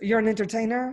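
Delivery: mocking sultry French accent. Retelling what a man said after handing over his card, imitating Xavier's French accent. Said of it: "I'm making fun of his voice".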